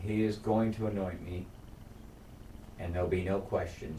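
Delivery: normal talking voice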